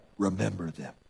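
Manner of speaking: very low, deep thriller movie-hero voice. Showing how a word in a Bible verse is meant: Taken Liam Neeson voice. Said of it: "the Taken Liam Neeson kind of a voice".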